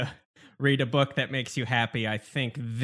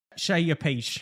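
put-on Cockney accent, pitched higher; 5 semitones higher than usual. Doing a line as Michael Caine in a chat, Michael Caine Cockney impression. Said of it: "I'm going to do it as Michael Caine".

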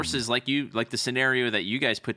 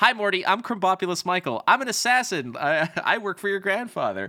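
high-pitched, happy, cheerful, delighted voice; 7 semitones higher, 3 dB louder than usual. Retelling a cartoon scene about a happy assassin: imitating Krombopulos Michael. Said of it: "he's like".

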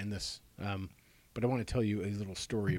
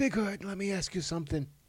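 bad, very high, choked, squeezed smoky voice; 10 semitones higher than usual. Quoting his question to Frank Thomas, the Big Hurt, do a terrible Fauci impression. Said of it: "I sounded like I just like inhaled a cigar".

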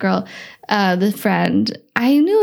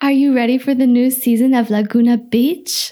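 cute, put-on Mexican accent. Speaker quoting a man planning a big party, in his cute mexican accent. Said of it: "with his cute like Mexican accent".

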